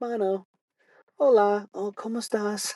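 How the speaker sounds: very high, squeaky, slow, drawn-out fumbling Spanish. Retelling a lady talking to dogs: imitating someone trying spanish. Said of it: "trying to speak Spanish to these dogs".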